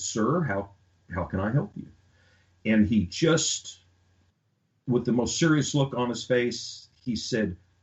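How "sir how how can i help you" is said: plain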